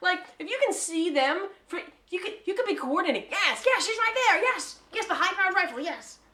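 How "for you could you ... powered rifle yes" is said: evil villain queen voice. Joking about a villain coordinating a sniper: Rita Repulsa voice. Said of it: "That's my Rita Repulsa voice".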